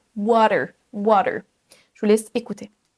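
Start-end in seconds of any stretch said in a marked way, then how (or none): 0.2-1.4 water, T flapped to D, American. Speaker teaching, in french, the american pronunciation of water, with american flapped t. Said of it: "transformer en fait le D, le T du milieu comme un D".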